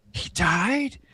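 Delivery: put-on loud high whisper. Recalling a film scene, imitating their dad leaning over: imitating dad's loud high whisper. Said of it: "he's whispering really loud".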